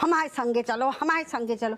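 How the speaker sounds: plain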